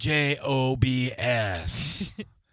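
very slow, letter-by-letter spelling out of letters.

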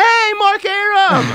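put-on shrill, very high, loud shout. Retelling a shoe model calling to him from the stage, retelling a scream.

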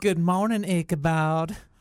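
put-on elderly Southern woman accent.

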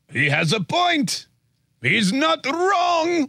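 drawn-out, slow, sing-song high voice. Radio host voicing how NATO countries reacted, mock impression of NATO countries. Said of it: "that was my impression of NATO countries".

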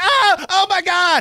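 put-on very high, shrill, loud, drawn-out little-girl scream. Retelling a dolphin sighting with another person in the car: retelling screaming like little girls. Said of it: "we were both like screaming like little girls".

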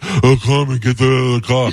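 breathy put-on voice. Imitating how another speaker mimicked them: breathy imitation of a voice. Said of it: "I love how breathy".

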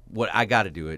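normal talking voice

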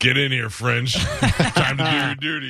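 acted-out drunken voice, slow and high. Joking about a TV uncle, imitating drunk Uncle Bill. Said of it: "Uncle Bill was drunk and he's like".

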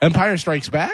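rising pitch on Back in "Empire Strikes Back". Told his inflection sounded odd, the speaker repeats it: rising question inflection. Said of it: "It was like a question".

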